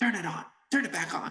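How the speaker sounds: loud whisper. Retelling urging a friend to switch the TV back on: retelling a loud whisper. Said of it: "whispering at the top of our lungs".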